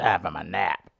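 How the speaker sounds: gravelly voice dropped very low, muttered. Showing another host how to do their friend's voice, a gravelly Sean impression. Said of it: "you gotta get a little more gravelly".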